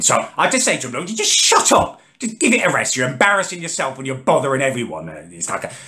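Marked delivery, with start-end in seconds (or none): 0.9-5.1 fed-up, fuming, furious delivery. Retelling what he said while fuming: retelling his own fuming reply. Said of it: "I'm fuming".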